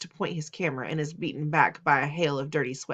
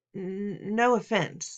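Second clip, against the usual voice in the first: halting, stuttering, stammered words; 5 semitones higher than usual. He backs away from an annoyed narrator, stammering. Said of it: "he stammers".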